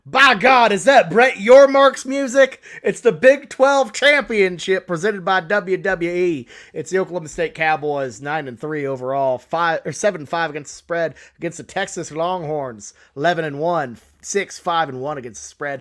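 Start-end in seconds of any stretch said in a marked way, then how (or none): 0.1-6.4 bad put-on wrestling announcer voice, higher and louder. Introducing a college football game as a wrestling announcer: horrible J.R. impression. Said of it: "That's a horrible J R, uh, impression".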